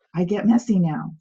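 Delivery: normal talking voice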